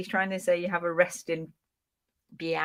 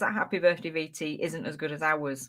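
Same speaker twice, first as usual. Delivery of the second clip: plain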